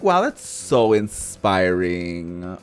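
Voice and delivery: slow, ironic, sarcastic, mocking admiration. Showing how they would have delivered these lines, sarcastic. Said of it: "I would have been sarcastic either way. I'm like".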